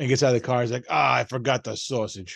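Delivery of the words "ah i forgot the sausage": put-on slow New York accent, sports-fan voice. Retelling a beer commercial guy getting out of the car: Giants or Jets fan accent. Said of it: "he has that kind of accent".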